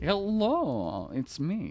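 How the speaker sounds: male Eastern European voice. Imagining a girl's internal monologue, the speaker tries an Eastern European accent. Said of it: "Eastern European accent".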